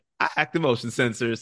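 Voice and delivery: normal talking voice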